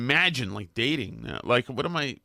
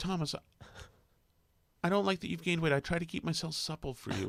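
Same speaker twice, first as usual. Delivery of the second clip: put-on little girl's voice, higher and quieter; 4 semitones higher, 7 dB quieter than usual. Retelling what a young girlfriend once said: little girl's voice. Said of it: "puts on kind of a little, a little girl's voice".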